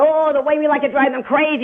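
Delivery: thrilled, gloating delivery. Imitating the other speaker's tone after being asked to: imitating a gloating tone. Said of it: "Imitate me".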